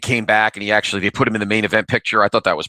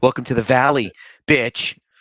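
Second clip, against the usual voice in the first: put-on snarky voice, much higher; 2 semitones higher than usual. Narrating tourist shots of the valley, doing a Tori from Cobra Kai voice. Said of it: "What do I sound like, Tori from Cobra Kai?".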